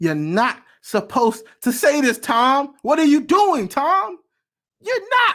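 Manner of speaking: incredulous outcry.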